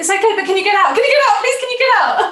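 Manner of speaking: frantic, rushed, high, panicked voice, repeated. Retelling asking a man to leave the toilet, panicked pleading. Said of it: "And I start panicking".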